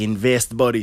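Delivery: put-on thick Jamaican accent. Retelling a former coworker's investing advice, imitating a friend's thick Jamaican accent. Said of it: "a thick Jamaican accent".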